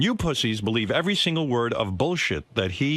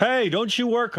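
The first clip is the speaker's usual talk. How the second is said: very high-pitched, jokey, teasing yelled call; 12 semitones higher than usual. Retelling yelling out at a walker ahead in the park: imitating own yelling. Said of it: "I yell out to her".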